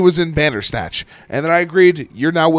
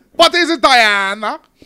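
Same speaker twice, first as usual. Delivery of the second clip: slow, pitched-up, put-on German-Israeli accent; 7 semitones higher than usual. Watching a movie scene with another viewer, doing a Gal Gadot impression. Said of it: "I can do it when somebody's talking".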